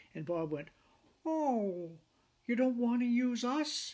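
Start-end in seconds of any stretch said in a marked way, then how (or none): 1.2-3.9 very high, slow, wounded, acted hurt-puppy voice. Retelling Bob's reply when asked about marine insurance, imitating Bob's hurt-puppy voice. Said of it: "he sounded like a hurt puppy".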